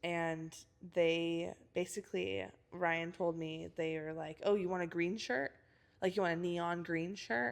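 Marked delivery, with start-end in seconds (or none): 4.4-7.5 mocking, talking-down, belittling tone. Retelling what was said in a meeting, imitating a condescending tone. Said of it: "saying it like just being insensi-".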